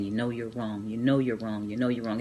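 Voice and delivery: mock muttering under breath. Recalling standing before a gunman at home, retelling muttering under breath. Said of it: "I was just under my breath saying".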